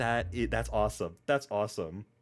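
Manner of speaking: ordinary talk, nothing marked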